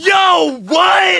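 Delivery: stunned, laughing, high-pitched shout of disbelief.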